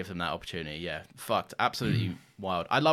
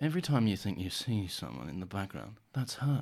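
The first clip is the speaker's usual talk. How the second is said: unsettling, creepy, eerie, spooky voice; 3 dB quieter than usual. Speaker quoting a remembered line that still terrifies them, in a creepy voice. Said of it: "remember that creepy voice just going".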